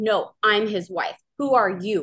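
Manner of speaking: angry screaming tone, held back and half-hearted. Retelling a phone call where the other woman kept screaming, retelling a scream. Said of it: "she just kept screaming".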